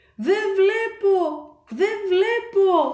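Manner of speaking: yelling in alarm, high and drawn out. Narrating, the diver cries out as a sea dragon covers his mask: shouting. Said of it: "άρχισε να φωνάζει ο δίτης".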